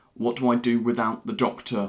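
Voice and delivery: ordinary talk, nothing marked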